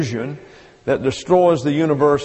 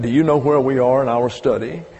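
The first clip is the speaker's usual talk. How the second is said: acted-out smirking tone; 2 semitones lower than usual. Retelling what listeners come up and ask, the speaker imitates a smirking question. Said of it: "with a little smirk on your face".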